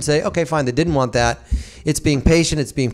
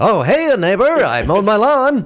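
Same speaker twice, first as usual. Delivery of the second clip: put-on, over-cheerful voice; 6 semitones higher, 4 dB louder than usual. Describing an over-cheerful neighbor character, mock-cheerful Hugh Beaumont voice. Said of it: "He's this over cheerly neighbor".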